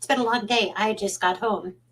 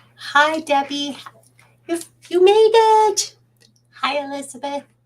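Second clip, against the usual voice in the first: unusually high-pitched, very loud voice; 7 semitones higher, 8 dB louder than usual. Greeting people by name as they arrive: high-pitched voice. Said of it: "My voice is high".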